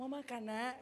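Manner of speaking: tender, mild, soft, gentle coaxing voice. Imagining a parent in a priest's robe speaking to a child: soft, gentle speech. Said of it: "pasti lebih lebih lembut kalau ngomong".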